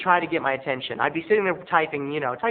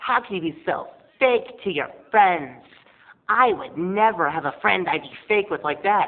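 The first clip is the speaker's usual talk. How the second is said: mock-evil, lisping put-on voice, higher pitch; 3 semitones higher than usual. Retelling what Michelle said to the speaker, in a lispy, evil voice as Michelle. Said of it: "this lispy, evil voice".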